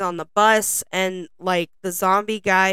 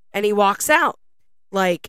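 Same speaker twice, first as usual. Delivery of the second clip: normal talking voice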